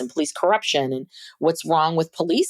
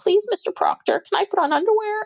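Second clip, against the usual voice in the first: high, sugary, sweet polite pleading. Mocking how a woman was expected to ask politely: mock sweet pleading. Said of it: "she wasn't being sweet".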